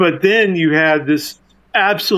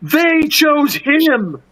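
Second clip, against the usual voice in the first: shouting like a villain, pitched up; 9 semitones higher than usual. Retelling a film's climax where Lex Luthor shouts at the engineer: imitating Lex Luthor shouting. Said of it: "Lex just shouts out".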